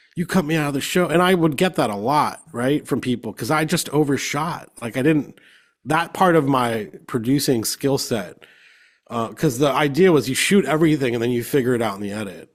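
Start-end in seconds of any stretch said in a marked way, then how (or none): 0.2-1.1 mock-heated outburst, faster. Retelling how a man he cut out of the show got heated at him, imitating someone heated. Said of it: "He got so heated at me".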